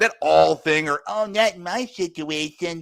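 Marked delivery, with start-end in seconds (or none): 1.1-2.8 very slow, drawn-out cartoon voice. Mocking what the women on child support say: Cartman voice. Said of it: "I know I'm doing the voice again".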